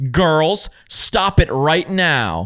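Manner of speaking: strict, stern, no-nonsense scolding tone. Retelling how the girlfriend cut in on the speaker and her sister, imitating a stern scolding voice. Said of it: "jumps in with a stern voice and says".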